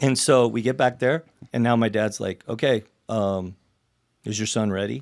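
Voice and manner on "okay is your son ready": mock patronizing, condescending, overly polite tone. Retelling how the speaker's dad asked another parent: imitating a patronizing tone. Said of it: "he's just kinda patronizing him now".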